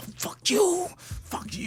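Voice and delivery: hushed whisper under the breath. Retelling swearing at a screen with a child asleep nearby: reenacted whisper. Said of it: "I have to whisper in the house".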